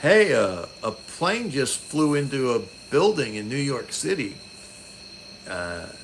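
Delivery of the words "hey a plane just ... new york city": plain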